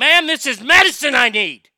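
full-on, very loud yelling. Retelling arguing with a woman about two hubs in Mesquite, retelling yelling at her. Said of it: "I'm like I'm like literally yelling".

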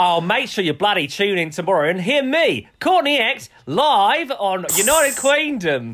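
fake Australian accent, high, slow and drawled. Closing the episode on request, announcing tomorrow's guest: put-on Australian accent. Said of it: "Do you wanna do your Australian in-, accent again".

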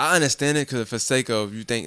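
ordinary talk

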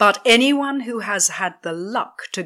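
plain reading voice

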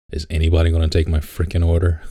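ordinary talk, nothing marked

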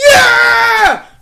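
high, loud, repeated yell. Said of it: "They were yelling in our ears".

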